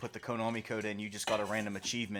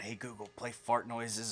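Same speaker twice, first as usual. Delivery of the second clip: put-on, very quiet voice. Retelling a prank on the wife, imitating saying it real quiet. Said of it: "I'd say in my phone real quiet".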